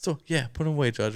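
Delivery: put-on talking like a thirteen-year-old kid. Retelling a movie scene where the prosecutor talks: imitating a thirteen-year-old kid. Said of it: "he's talking like a thirteen-year-old kid would now".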